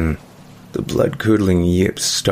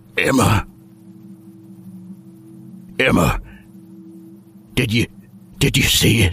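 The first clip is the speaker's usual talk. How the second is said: hoarse, rasping, halting, slow gasps; 4 semitones higher than usual. Silas, after gasping and coughing, speaks to Emma, hoarse. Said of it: "hoarsely, he spoke her name".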